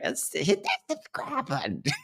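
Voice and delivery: odd, silly, breathy, hushed put-on voice. Urging viewers to subscribe, in a weird put-on voice. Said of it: "That's a weird voice. Where'd that come from?".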